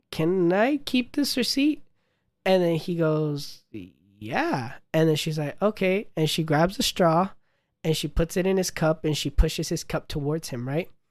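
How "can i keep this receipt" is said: very slow, drawn-out, rising pitched-up delivery. Retelling what a woman at the counter asked them, really slowly. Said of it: "really slowly she goes".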